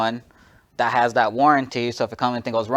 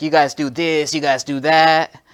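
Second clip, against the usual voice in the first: put-on angry rant, higher pitch; 4 semitones higher than usual. Retelling a mad customer ripped off at another store, imitating an angry customer. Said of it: "he was mad".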